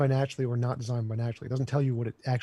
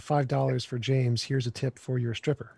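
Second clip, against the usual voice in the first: normal talking voice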